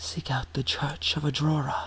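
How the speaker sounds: soft, gentle, hushed, mysterious disembodied voice. Game master narrating a vision, a single voice speaks to the players in a soft voice. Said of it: "hear a single soft voice say to you".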